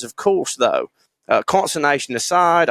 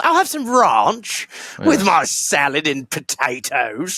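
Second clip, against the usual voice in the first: put-on English accent with broad ah; 3 semitones higher than usual. Retelling what an english listener says when ordering, english accent, broad ah. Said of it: "I'm English".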